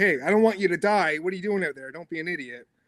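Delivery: fond, concerned, caring scolding tone. Retelling a caring local who yelled about the ice: imitating a caring yell. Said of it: "we're kinda yelling at each other just 'cause we care".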